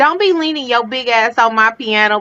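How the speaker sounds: high-pitched grandma voice, scolding tone. Speaker quoting what their grandma used to tell them: imitating grandma. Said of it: "she would tell me stuff like".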